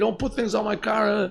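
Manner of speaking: put-on gruff, raspy screaming in a man's voice. Retelling how a man in a restaurant yelled about the car: imitating a man screaming. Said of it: "he started screaming at me".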